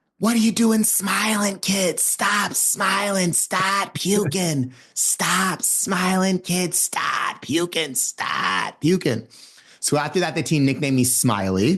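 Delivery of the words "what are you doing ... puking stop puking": play-acted, hard-nosed coach, high-pitched screaming rant. Retelling how a coach yelled at the team, imitating a coach screaming. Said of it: "he just starts screaming at me".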